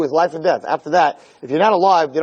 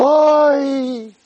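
very high, drawn-out, long wail of grief; 10 semitones higher than usual. Showing the long cry that matches the tekiah: imitating a long grief yell. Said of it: "That's the sound of tekiah".

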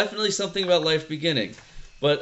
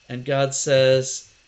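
ordinary talk, nothing marked

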